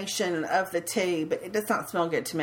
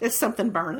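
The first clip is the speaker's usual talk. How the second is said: ordinary delivery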